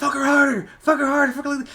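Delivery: put-on yelling, pitched very high. Retelling a director yelling at his daughter on set: imitating someone yelling. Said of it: "yelling at his daughter".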